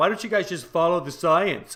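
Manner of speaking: play-acted derisive tone, full of contempt, mocking. Imitating how others say the line mockingly: imitating a mocking tone. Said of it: "they say it mockingly".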